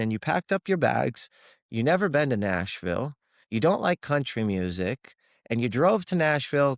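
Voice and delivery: ordinary talk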